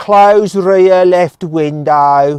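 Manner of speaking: broad Midlands accent laid on thick, loud and high. Giving a command to a car's voice assistant in a strong Midlands accent. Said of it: "I'm going to do a really strong Midlands accent".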